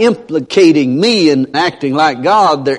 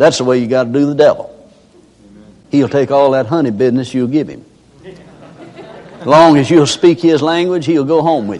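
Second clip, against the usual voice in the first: ordinary talk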